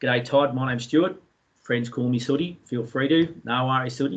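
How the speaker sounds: plain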